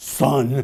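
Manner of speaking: low, menacing, threatening single word. Speaker retells a capped man addressing him, in a put-on low menacing tone. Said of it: "he said in a low, menacing tone".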